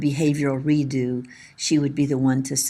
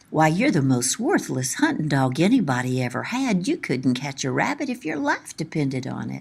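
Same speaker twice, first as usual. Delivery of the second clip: light, teasing, swooping sing-song playful voice. Retelling how a friend teased his hunting dog: imitating a playful voice. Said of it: "would be saying in a playful voice".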